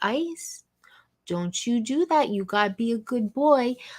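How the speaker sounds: gentle, kindly, nice and sweet acted tone. Retelling how Max scolds the dog: imitating Max talking all nice. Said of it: "Max always talks all nice to him".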